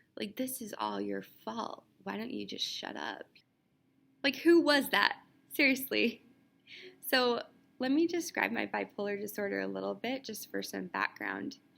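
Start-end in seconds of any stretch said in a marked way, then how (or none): 0.4-3.3 soft, quiet, hushed, under the breath. Retelling the nurse's aide's words: imitating someone speaking quietly. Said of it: "quietly sometimes".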